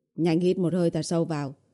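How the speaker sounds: plain reading voice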